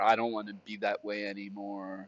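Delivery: normal talking voice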